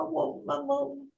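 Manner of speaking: put-on plaintive, high, soft little-kid voice, very drawn out. Recalling a mother near the end of her life, imitating mum's childlike voice. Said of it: "like a child would".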